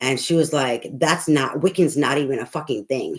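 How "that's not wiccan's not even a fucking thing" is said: mock angry, pissed-off outburst. Retelling what an upset lady said to them: imitating someone pissed off. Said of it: "She was all pissed off".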